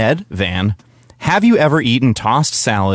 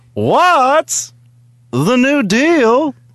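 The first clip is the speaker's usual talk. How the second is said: "what's" very high, slow, drawn out. Telling a joke for a stand-up set, Jerry Seinfeld impression. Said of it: "my impersonation of, uh, uh, Jerry Seinfeld asking questions".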